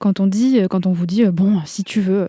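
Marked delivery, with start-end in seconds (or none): 1.3-2.3 snide, grudging sarcastic tone. Quoting what someone might say to you, in a sarcastic tone. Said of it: "sur un ton, heu, sarcastique comme ça".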